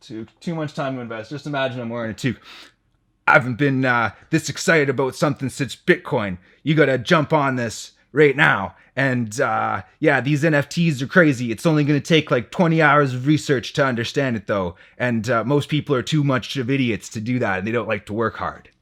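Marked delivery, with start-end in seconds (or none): 3.3-18.5 hyped-up, gremlin-like voice, high-pitched hype. Imagining he wears a toque, the speaker does his Gary Vee impression. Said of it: "That's my Gary Vee impression".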